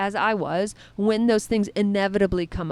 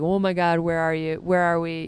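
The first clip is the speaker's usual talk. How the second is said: put-on anxious, nervous, fretful dog voice; 4 semitones lower than usual. Retelling how the dog reacted while looking around: imitating a nervous dog. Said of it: "she was really nervous and looking around".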